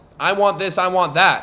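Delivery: plain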